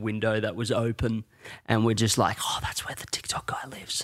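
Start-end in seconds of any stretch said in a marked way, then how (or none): 2.4-4.0 put-on whisper, quieter. Retelling what the neighbours said outside the open window: imitating neighbours whispering.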